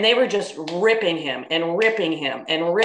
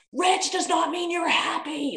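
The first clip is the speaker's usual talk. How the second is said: play-acted emphatic scream, very high-pitched, drawn-out; 12 semitones higher, 3 dB quieter than usual. Retelling a reaction to callers on a radio show: imitating own screaming. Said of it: "I'm screaming".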